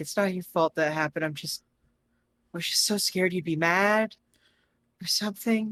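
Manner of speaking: weepy, a little tearful, on the verge of crying. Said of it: "he starts crying a little bit".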